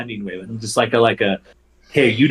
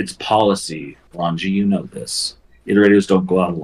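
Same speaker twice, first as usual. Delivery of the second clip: gentle, softer tone, pitched lower; 4 semitones lower than usual. Game master voicing a character speaking to the player's character: softened tone. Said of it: "she again softens that tone".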